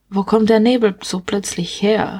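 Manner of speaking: usual speaking voice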